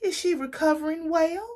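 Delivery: put-on very high, genuine country accent. Retelling a woman asking about a patient's recovery, imitating Leslie's country accent. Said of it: "She had this real country accent".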